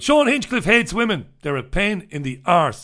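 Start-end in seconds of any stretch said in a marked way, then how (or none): none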